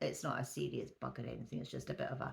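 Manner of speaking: low, creaky, raspy voice with a sniffle.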